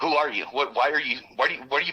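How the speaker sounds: put-on angry stammering. Man recounts a guy asking him to step out of the car; retelling angry stammering. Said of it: "I'm kind of stammering because I'm angry".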